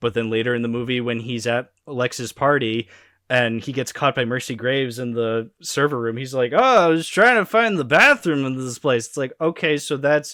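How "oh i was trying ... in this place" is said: dopey, clueless, airheaded voice with pitch lifted. Retelling being caught in a server room: imitating airheaded billionaire Bruce Wayne. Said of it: "airheaded billionaire Bruce Wayne".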